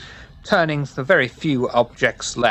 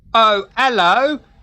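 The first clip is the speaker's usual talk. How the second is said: very high, loud, put-on Cockney accent; 11 semitones higher, 5 dB louder than usual. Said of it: "This is what Bully sounds like when he's trying to do a Cockney accent".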